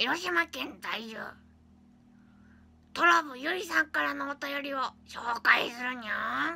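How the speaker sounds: very loud, put-on cartoon cat voice. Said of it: "似てなかった".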